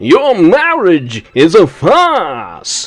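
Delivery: put-on booming actor voice with heavy stress on farce. Quoting a line from the series: Matt Berry voice, stress on FARCE. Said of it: "put the emphasis on the arse part".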